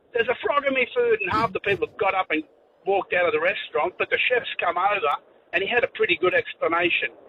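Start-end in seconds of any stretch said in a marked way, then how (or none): 0.1-1.1 sudden, high-pitched shout. Speaker recounts finding a frog in their restaurant food, retelling a yell. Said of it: "I yelled out".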